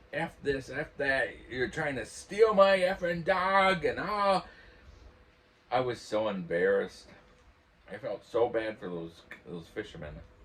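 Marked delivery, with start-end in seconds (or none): 0.1-3.8 put-on very high, shrill, loud drunk man's screaming. Speaker retells a drunk man yelling at fishermen about his dog, imitating John screaming. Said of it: "He's just screaming".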